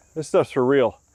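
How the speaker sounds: usual speaking voice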